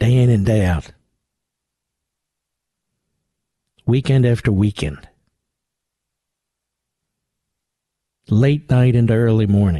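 hushed voice. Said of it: "So I will whisper it".

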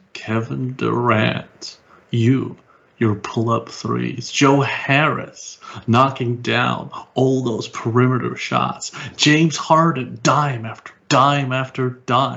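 put-on brooding narrator voice, like dark inner monologue. Giving a mini summary of the game, Joe narrator voice. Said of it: "I'm going to give a mini summary of the game in Joe's narrative voice".

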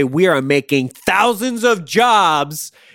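mock angry yelling. Acting out what to say to a shopper in line: yelling like Tom Cruise. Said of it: "I'm about to yell like Tom Cruise".

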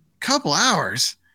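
high, hollered, called-out delivery. Retelling the wife's reply to the golf plans: imitating someone yelling. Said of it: "she yells out".

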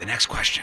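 whispered quiz-host patter. Introducing the next question to the ladies: whispering. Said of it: "Why am I whispering?".

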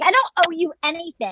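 mock-defensive tone. Retelling a woman's argument with a man questioning her, acting her mock-defensive. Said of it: "She gets defensive".

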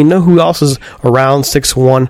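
ordinary talk

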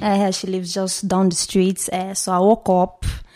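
Nigerian-accented speech. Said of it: "I'll answer in that accent".

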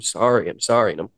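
put-on, tearful crying through the words. Retelling apologizing to a man who let him go, imitating own crying. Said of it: "And I'm crying".

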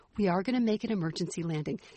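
play-acted utterly calm, unruffled librarian tone. Retelling an older flight attendant speaking on the intercom: imitating calm librarian tone. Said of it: "in like the calmest librarian tone".

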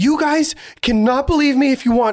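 play-acted crying, tearful, high-pitched outburst. Retelling a woman in tears walking up the plane aisle, imitating someone crying. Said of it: "she's crying".

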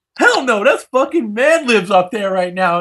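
high-pitched, excited, shouted outburst. Retelling a concert moment with a friend: imitating own yell. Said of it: "Sorry to yell out loud like that".

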